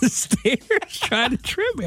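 high voice while laughing.

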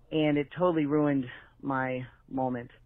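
plain

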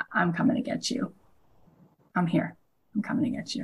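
soft, unvoiced whisper.

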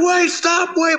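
put-on very high-pitched, shrill yelling. Retelling running after a pulling-away bus at its drivers, retelling a yell. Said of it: "I'm like yelling like".

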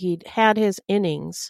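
plain

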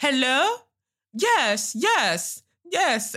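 put-on very high, swooping, heightened Nigerian English accent. Imitating mum on the phone, in a heightened English Nigerian accent. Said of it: "that heightened English Nigerian accent".

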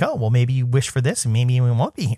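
ordinary delivery

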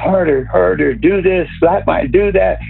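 play-acted, heated screaming in a rush of words. Retelling what a woman screamed during sex, imitating someone screaming. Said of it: "she's screaming".

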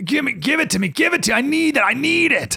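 very high-pitched, desperate pleading tone. Retelling Esau begging for the stew: imitating starving Esau. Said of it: "He's salivating, he's starving, he's dying here".

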